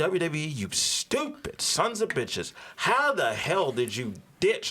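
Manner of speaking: furious, angry, cursing rant. Reporting wrestling news, then venting at WWE: angry rant. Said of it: "because I am pissed off".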